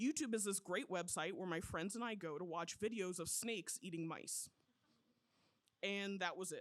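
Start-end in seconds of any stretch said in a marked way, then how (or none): none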